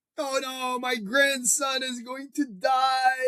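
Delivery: put-on high, slow, tearful sobbing lament. Retelling a grandfather's reaction to hearing the plan: imitating someone crying. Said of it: "he started crying".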